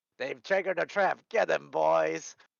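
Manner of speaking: very loud, gruff, rough, booming dwarf shout. Narrating a scene, from the back a dwarven voice yells out. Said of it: "you hear a dwarven voice yell out".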